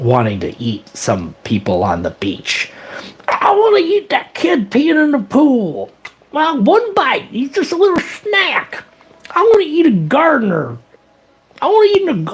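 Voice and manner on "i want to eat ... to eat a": very high, gummy, toothless mumbling shark voice. Impression of a shark with no teeth, mumbly toothless shark voice. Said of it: "This is my impression of a shark with no teeth".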